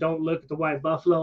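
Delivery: ordinary delivery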